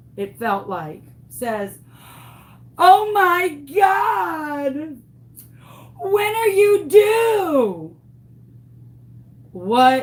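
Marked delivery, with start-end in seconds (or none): 2.8-8.0 mock bellow from the diaphragm, very high, loud, slow. Retelling a mother's question before other mothers: imitating someone shouting loudly. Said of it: "in the loudest voice that this woman possibly has".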